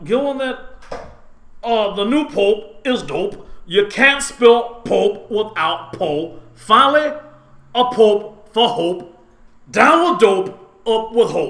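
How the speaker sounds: very loud, booming, slow, high, grand, deliberate declaiming. Showing the other speaker how the joke should sound: Jesse Jackson impression. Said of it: "like Jesse Jackson".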